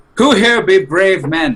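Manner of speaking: calling out, pitched high. Playing a character in a bar, standing up with a drink, yelling loudly. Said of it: "and I yell rather loudly".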